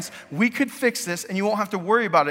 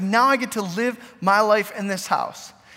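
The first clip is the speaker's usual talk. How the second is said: ordinary talk, nothing marked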